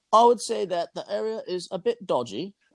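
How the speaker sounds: bad put-on English accent. Repeating what the Brits would say about an area, in a bad English accent. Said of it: "is that your English accent?".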